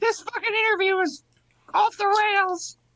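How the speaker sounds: squeaky cartoon mouse voice. Mid-interview, the interviewee speaks up, sounding like Mickey Mouse. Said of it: "I kind of sound like Mickey Mouse".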